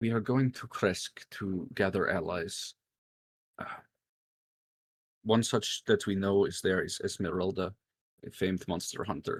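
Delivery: secretive, hushed, half-whispered stage whisper. A player's character leans in close to another character; half-whispering. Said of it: "and whisper".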